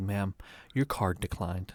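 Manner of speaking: put-on, extremely smug, gloating politeness. Retelling telling a customer her card declined: imitating own smug, shit-eating tone. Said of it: "as shit-eating as I possibly could".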